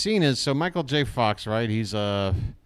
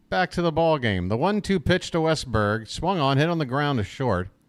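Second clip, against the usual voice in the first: usual speaking voice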